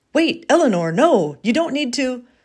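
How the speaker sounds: irritated, helpless protesting tone. A man on the phone tries to stop a woman talking to the neighbour, annoyed.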